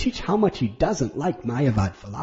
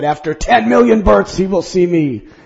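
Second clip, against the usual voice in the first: imitated stern, harsh, angry voice; 13 semitones higher than usual. As if you're retelling an old story about a holy teacher who snapped sternly at a weeping devotee, recreating his severe tone. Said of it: "became ecstatic, jumping in the air, leaping, crying out".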